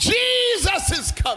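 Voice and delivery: high full-throated scream at the top of the lungs. Preaching on the midnight cry to his listeners, screaming. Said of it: "I'm here screaming to you right now".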